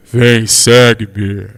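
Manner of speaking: very deep, booming, thunderous voice. Speaker imagines an angel coming down and speaking, in a booming thunder voice. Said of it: "vai falar assim com uma voz de trovão".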